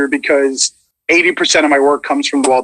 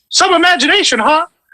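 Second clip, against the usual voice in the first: very high, squeaky, rounder mouse voice. Demonstrating different versions of a Disney voice, Wayne Allwine-style voice. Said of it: "more of the the Wayne Allwine".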